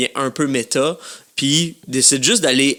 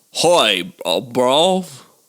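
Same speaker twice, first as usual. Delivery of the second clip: put-on, attempted English accent. Asked to switch from an American to an English accent: attempted English accent. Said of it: "maintenant, anglais".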